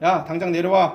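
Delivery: loud, put-on domineering, overbearing tone. Retelling a man using the king's authority to order Elijah down, mock-domineering command. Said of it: "정말 그 고압적이에요".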